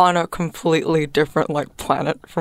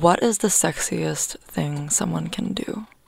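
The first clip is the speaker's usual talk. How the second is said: hushed half-whisper with no voice at all; 4 dB quieter than usual. Podcast host asking listeners a question, half-whispering. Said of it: "I had to whisper that".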